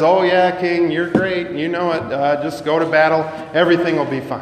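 acted-out, mock-sarcastic tone. Speaker retelling the prophet's reply to the king, retelling a sarcastic remark. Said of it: "sarcastically says".

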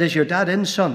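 ordinary delivery

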